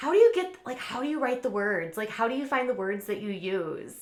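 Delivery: acted silly, goofy, super kitschy, deliberately dumb tone. Retelling questions to a musician: imitating her own silly tone. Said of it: "being super kitschy and stupid".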